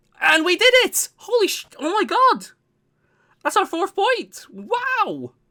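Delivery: shocked, stunned, very high cry, "wow" drawn out long. Reacting to winning the fourth point against Sawblaze: shocked. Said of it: "I'm a little bit shocked there".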